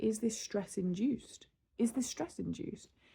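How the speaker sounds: ordinary talk, nothing marked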